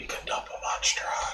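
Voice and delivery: hushed whisper, barely voiced. Speaking in character while walking past another character: whispering in character. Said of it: "I'm just gonna whisper".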